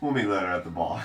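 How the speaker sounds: soft, secretive half-whisper, close up. Voicing a character who leans in to a player: half-whispering in someone's ear. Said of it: "chuckles and whispers in your ear".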